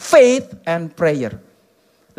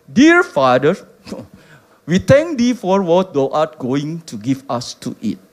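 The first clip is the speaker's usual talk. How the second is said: put-on British accent; 5 semitones lower than usual. Quoting George Muller's prayer, speaker uses George Muller's British accent. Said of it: "Itu logat Inggris kali gitu".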